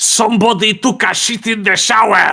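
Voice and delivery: put-on thickest Polish accent, very high and loud. Retelling what the cleaning lady said coming downstairs, in the thickest Polish accent. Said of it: "in the thickest Polish accent".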